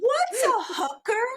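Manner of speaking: mock very high, loud voice. Retelling asking their dad a question loudly enough for the whole store. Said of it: "I say loudly enough for the whole damn store".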